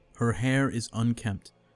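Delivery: ordinary delivery, nothing marked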